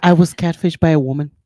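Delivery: very deep, loud, grave, dead serious voice. Sharing that she was catfished by a woman, very serious. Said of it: "She said it so serious".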